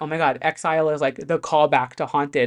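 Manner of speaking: ordinary talk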